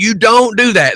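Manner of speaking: acted-out, re-enacted screaming and yelling. Retelling what the speaker screamed after opening the door, retelling a scream. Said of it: "And I'm screaming".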